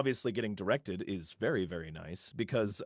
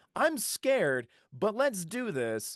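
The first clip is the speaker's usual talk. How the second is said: put-on young naive spirited voice, higher; 11 semitones higher, 4 dB louder than usual. Showing how the young character sounds: young naive Herschel voice. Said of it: "put in all this naivety and put all this young and spiritedness".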